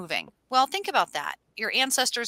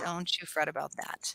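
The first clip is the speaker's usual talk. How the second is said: soft, breathy whisper, breathed out; 6 semitones lower, 11 dB quieter than usual. Showing another speaker a Delilah impression. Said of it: "I can do Delilah".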